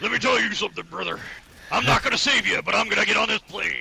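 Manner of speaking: rough tough-guy voice. Joining in the same bit, imitating the character: muscle man voice. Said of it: "straight muscle man with her voice".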